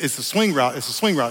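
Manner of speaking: ordinary talk, nothing marked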